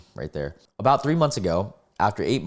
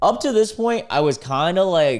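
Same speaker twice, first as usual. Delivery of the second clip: ordinary delivery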